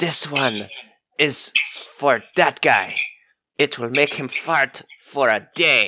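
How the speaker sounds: voiced stage whisper. A character hands beef jerky to Ghostslinger and speaks into his ear, whispered. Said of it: "he whispers in Ghostslinger's ear".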